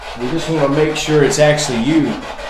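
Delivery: calling out loudly.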